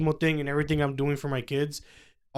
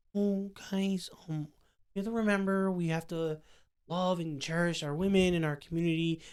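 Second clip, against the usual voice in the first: gentle, pleasant-sounding voice; 3 semitones higher, 8 dB quieter than usual. Showing the voice the other speaker's mom wanted them to use: mock liberal voice. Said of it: "That voice, she wanted me to talk like that".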